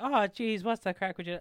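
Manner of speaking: exaggerated Irish accent. Recounting how an irish presenter overdid her accent; exaggerated irish accent. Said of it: "she's overdoing it".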